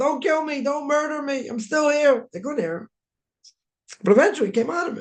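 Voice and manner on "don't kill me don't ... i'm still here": acted, high, drawn-out scream at top of lungs. Retelling what an unconscious son screamed to his parents: imitating someone screaming. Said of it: "screaming at the top of his lungs".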